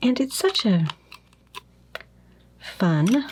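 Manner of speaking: heavy, slow, extremely sarcastic delivery. Describing an experience of lupus fog: heavy sarcasm. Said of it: "I'll say that as sarcastically as I can".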